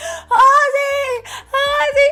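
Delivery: high, loud, scared crying scream.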